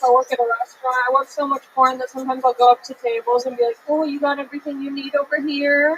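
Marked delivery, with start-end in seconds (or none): 3.9-6.0 put-on suggestive, sultry bedroom voice. Retelling going up to tables at a restaurant: put-on porn voice. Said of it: "forget to turn my porn voice off".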